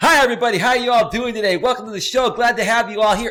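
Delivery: bright, peppy, high, loud, full of energy. Comparing a podcast's voices, the speaker demos a show intro in a high-pitched energetic voice. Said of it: "one's more high pitched. It's got more energy".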